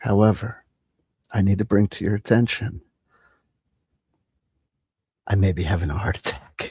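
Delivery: mock steady, soothing, calm announcer tone. Imagining a guy speaking to you as you fall asleep: put-on calm tone. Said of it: "I'm speaking to you in a calm tone of voice".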